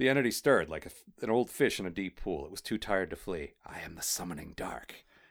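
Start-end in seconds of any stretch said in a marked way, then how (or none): 3.7-4.9 rough, creaky, hissing voice. Reading a story aloud, voicing the Summoning Dark: hissing voice. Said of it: "it would have been a hiss".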